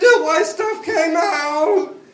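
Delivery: play-acted very loud, very high blubbering sob. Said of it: "And I started crying".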